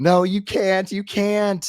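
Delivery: very high, stretched-out, drawn-out screaming. Describing the Archmage and the director being impaled: screaming in character. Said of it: "they're both screaming".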